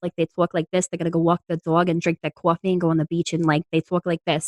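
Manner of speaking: put-on Brooklyn-Bronx Long Island accent. Speaker from Long Island showing how locals talk, Long Island accent. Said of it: "like a Brooklyn, Bronx, like Long Island".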